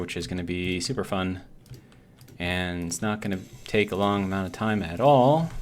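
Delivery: heavy, dry, sarcastic understatement.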